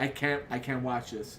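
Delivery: ordinary talk, nothing marked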